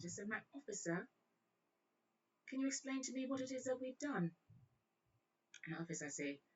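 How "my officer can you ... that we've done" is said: put-on British accent, pitched up. Retelling a woman answering a police officer at a traffic stop, put-on British accent. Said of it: "The girl broke in a one British accent".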